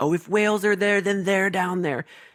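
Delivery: all-out, high-pitched screaming. Retelling a movie scene where the hacker reacts: imitating someone screaming. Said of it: "is just screaming".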